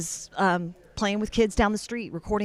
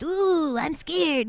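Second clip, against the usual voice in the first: put-on high voice of small child playing spooky ghost; 9 semitones higher, 3 dB louder than usual. Showing toy voices done one after another: little kid dressed as a ghost voice. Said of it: "a little kid dressed up as a ghost".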